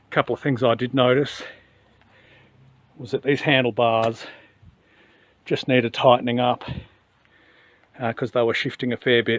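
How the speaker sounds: breathless, out-of-breath speaking. Describing loose handlebars on a bike build: out of breath. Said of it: "I'm redonkulously out of breath right now".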